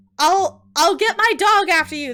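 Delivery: very loud high squeak, voice catching with fear. Narrator reading a hunter's reply to a creature, a frightened squeak. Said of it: "his voice catching in his throat with fear".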